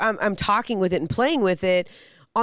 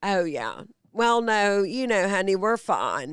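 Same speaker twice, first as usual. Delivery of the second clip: talking in a grandma voice. Imitating a grandmother on the phone: impression of grandma. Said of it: "the impression of your grandma".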